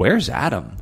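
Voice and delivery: bewildered, confused, puzzled tone. Podcast host opening after the break with a planned line: confused tone. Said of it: "in a confused tone".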